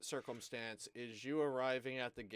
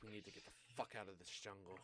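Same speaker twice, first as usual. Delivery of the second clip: very hushed, weary, exasperated, fed-up sigh; 4 semitones lower, 12 dB quieter than usual. Voicing a character who sighs after a rough escape: sighing, fed up. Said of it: "sighs, and she's like".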